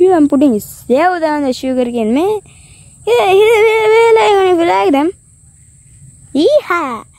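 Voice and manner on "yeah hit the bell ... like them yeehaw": put-on Wild West cowboy accent, pitched up. Youtuber asking viewers to hit the bell icon, cowboy accent. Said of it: "I just made a cowboy accent in there".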